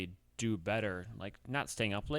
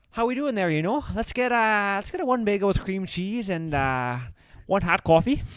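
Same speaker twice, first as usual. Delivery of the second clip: very high, put-on Minnesota accent; 11 semitones higher, 8 dB louder than usual. Speaker recalls ordering at the Tim Hortons drive-through in a put-on Minnesota accent. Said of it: "We would do the Minnesota accent on the drive-through".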